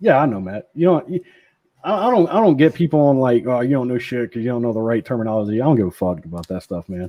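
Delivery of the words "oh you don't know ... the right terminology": ordinary talk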